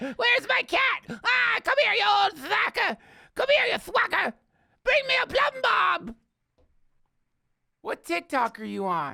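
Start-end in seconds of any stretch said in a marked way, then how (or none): 0.0-6.2 put-on crone voice, higher and louder. Acting out a witch calling for her familiar: old witch voice. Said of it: "Sounds like an old witch".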